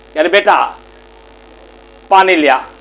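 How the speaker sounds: ordinary delivery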